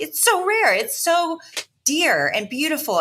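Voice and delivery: emphatic, high outcry with words stretched long. Retelling own reaction to the other speaker's phone call: imitating own past yelling. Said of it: "I'm yelling at you 'cause I'm like".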